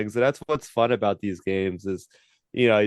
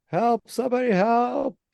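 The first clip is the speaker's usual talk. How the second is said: very high-pitched loud yell; 12 semitones higher than usual. Retelling a lady in the game calling for help: imitating a lady yelling. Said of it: "I hear a lady going, yelling".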